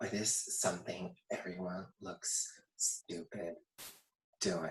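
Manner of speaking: very soft whispered murmur under the breath.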